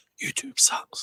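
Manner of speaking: hushed whisper, under the breath. Saying something so no one can hear: said quietly. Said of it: "I'll say this quietly".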